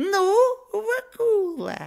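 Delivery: squeaky, very high-pitched little devil voice. The devil, still clinging to the man's neck, calls out to him, squeaking. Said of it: "пропищал черт".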